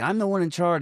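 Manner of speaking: shrill high yelling. Retelling a scene where the chief yells at John: imitating someone yelling. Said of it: "the chief starts yelling at John".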